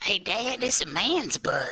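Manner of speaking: put-on very high-pitched child's voice. Speaker calls out to Dad in a child's voice. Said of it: "just I got a child's voice".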